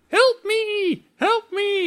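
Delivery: mock very high, slow, stretched-out yelling. Retelling the movie's ending as the spider comes down: the Fly yelling for help. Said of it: "he starts yelling".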